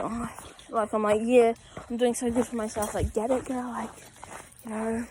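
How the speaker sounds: normal talking voice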